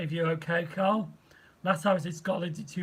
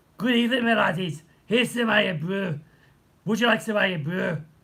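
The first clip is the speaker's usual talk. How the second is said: poorly done put-on Scottish brogue; 3 semitones higher, 3 dB louder than usual. Copying someone who becomes a crazy Scotsman, bad put-on Scottish accent. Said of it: "he puts on a Scottish accent ... I'm going to give it to you as well ... probably the worst Scottish accent ever".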